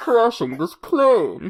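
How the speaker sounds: loud, booming villain voice. Joking with co-hosts about a famous plane crash, in a Bane voice. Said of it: "that was my Bane voice".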